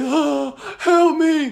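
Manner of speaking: very high, acted-out sobbing, pleading tone. Retelling sitting in the bathroom crying, acting out crying and pleading for help. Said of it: "sitting there crying".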